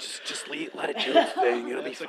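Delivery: quiet whispering. Acting out apologizing to a stranger six chairs away at the movies: whispering.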